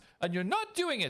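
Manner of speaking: high-pitched, furious, angry yelling.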